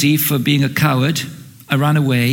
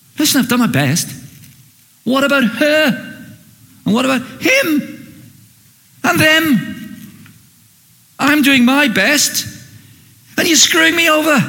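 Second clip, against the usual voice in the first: mock, loud, very high, mad, angry outburst; 11 semitones higher than usual. Speaker acting out a biblical figure's complaint to God; acting out a loud, mad complaint. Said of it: "the reason I can do it in a loud voice".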